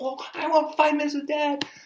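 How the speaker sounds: put-on eager child voice, very high and loud.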